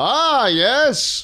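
very high, put-on medieval knight voice. Podcast hosts role-play as knights welcoming a guest, medieval knight voice. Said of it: "Do I have to talk like a medieval knight?".

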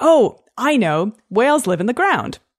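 confident, assured, sure delivery with no hesitation. Speaker demonstrates the confident speaker from a children's study: confident voice. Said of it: "in a confident voice".

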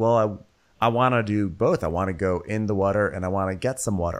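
ordinary talk

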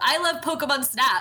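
high-pitched, long, stretched-out yell. Retelling what he yelled on a busy street, retelling a yell. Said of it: "I just yelled".

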